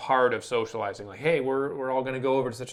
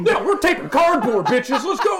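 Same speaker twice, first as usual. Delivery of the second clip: very high, very loud, rowdy, hyped yelling tirade; 14 semitones higher, 9 dB louder than usual. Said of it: "that was a bit of a tirade".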